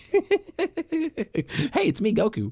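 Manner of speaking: stretched out, high, sing-song delivery. Joking on the podcast about a hat and hair: Goku voice. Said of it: "don't let me get the voice down".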